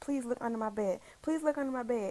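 put-on panicked, frantic pleading tone. Speaker retelling begging him on FaceTime to check under the bed, retelling panicked begging. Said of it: "And I'm panicking".

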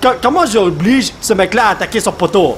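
ordinary talk, nothing marked

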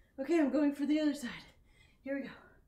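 huffing and puffing. Halfway through, the speaker announces starting on the other side; breathing loudly. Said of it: "I know I'm breathing super loud".

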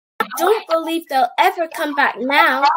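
usual speaking voice

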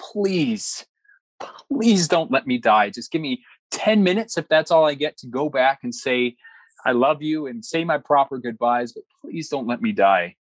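play-acted imploring, pleading, begging tone. Recounting a past moment, the speaker acts out their own words: retelling own pleading. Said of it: "I just remember pleading and saying".

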